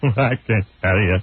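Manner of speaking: put-on timid, whimpering voice. Mocking a crying interviewee: Cowardly Lion voice imitating O J. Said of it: "He's like the cowardly lion".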